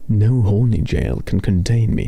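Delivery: put-on British accent. Playfully answering the chat in a British accent. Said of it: "Ophi is British right now".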